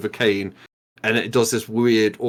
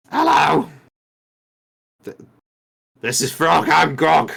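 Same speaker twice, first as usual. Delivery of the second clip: high, scratchy, creaky, rough goblin voice; 6 semitones higher, 3 dB louder than usual. Voicing a goblin who bows atop a giant frog: goblin voice. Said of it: "the goblin stands atop of the".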